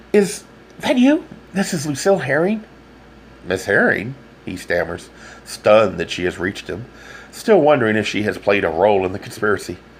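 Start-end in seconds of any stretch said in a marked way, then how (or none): 0.2-2.7 very high, breathless voice. A woman calls Mister Manning on the phone, breathless. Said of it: "asks a woman, breathless voice".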